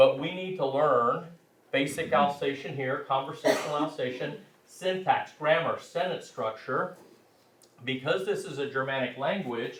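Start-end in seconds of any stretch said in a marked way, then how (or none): none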